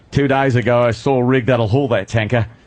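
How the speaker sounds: Australian accent. Quoting a Road Warrior line, in a Road Warrior Australian accent. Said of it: "You do your Australian".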